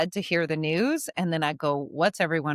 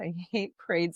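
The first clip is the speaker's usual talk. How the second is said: muttered under the breath, quieter; 5 dB quieter than usual. Quoting what he would say at every parade, muttered under breath. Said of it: "he'd go under his breath".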